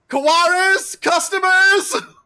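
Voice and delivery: very high, loud yell thrown off to the side. Storyteller voices a woman announcing arriving customers, yelling. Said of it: "ducks away off to the side and yells".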